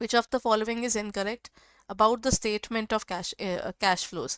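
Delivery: ordinary talk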